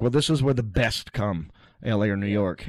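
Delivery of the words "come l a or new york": ordinary talk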